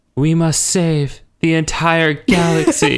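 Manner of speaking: mock grave, slow, ominous, foreboding tone. Recapping a scene where Jean lands and speaks, mock-ominous as Jean. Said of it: "pretty much ominously goes".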